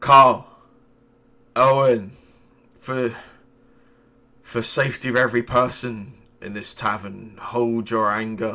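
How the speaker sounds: put-on worn, tired voice, slightly slurring. Narrator voicing a figure addressing two people in a tavern, worn, slightly slurring voice. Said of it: "slightly slurring sort of voice speak out".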